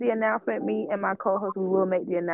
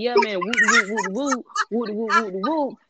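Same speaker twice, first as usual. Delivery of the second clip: casual, relaxed street-talk storytelling voice; 3 semitones higher, 3 dB louder than usual. Retelling how friends talk when telling a story: imitating homeboys telling a story. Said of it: "they be like".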